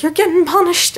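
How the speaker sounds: very high, shrill put-on yelling. Retelling parents scolding about a messy room: imitating parents yelling. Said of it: "yelling at me".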